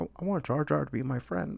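exaggerated, creaky put-on voice, laid on thick. Showing how a good impression should sound, slightly exaggerated: exaggerated George Lucas impression. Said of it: "But you gotta be like".

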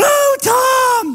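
acted-out panic. Retelling being lost in a bathroom and calling for help, retelling freaking out. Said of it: "And I'm freaking out".

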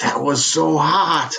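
slow, half-sarcastic but fully sincere delivery. Retelling what someone said after a practice jam: imitating Joe Polani, semi-sarcastic yet earnest. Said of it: "a semi-sarcastic, yet totally earnest".

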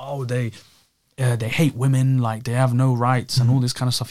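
usual speaking voice

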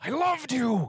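hollering.

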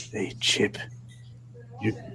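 hushed voice. Voicing a character who asks a crewmate for answers: whispering. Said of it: "and just whispers".

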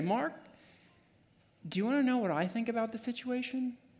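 quiet, still small voice, pitched high. Retelling hearing a voice speak after calming down: still small voice. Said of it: "I hear this still small voice say".

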